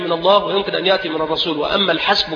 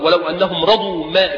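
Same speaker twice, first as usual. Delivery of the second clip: ordinary delivery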